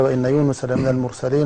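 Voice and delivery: plain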